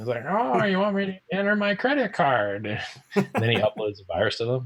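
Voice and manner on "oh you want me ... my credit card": put-on very high-pitched, swooping old lady voice. Describing a man who uses a voice changer, imitating his old lady voice. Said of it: "he sounds like an old lady".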